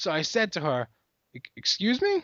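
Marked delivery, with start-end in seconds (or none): 1.3-2.2 little stammer on first syllable of "excuse", pitched up. Retelling a reply to a rude customer, imitating own stutter. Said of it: "Just like that, like, a little stutter".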